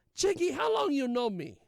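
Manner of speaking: put-on Argentinian accent, very high and loud. Retelling an exchange with a woman about a meeting time: imitating an Argentinian accent. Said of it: "there was an Argentinian uh".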